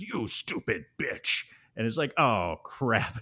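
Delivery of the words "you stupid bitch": menacing killer-doll voice. Retelling a movie scene, speaking the serial killer's line in Chucky voice. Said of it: "uses his voice and just goes".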